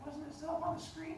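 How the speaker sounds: high, puzzled, confused student voice.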